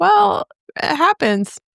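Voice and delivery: high, slow, drawn-out mock innocent tone. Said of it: "I'm like".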